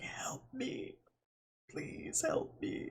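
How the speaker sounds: breathy, hushed whisper, barely voiced. Voicing Kif, speaking so that Zap can't hear, whispering. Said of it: "just whispers so that Zap can't hear".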